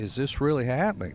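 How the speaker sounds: plain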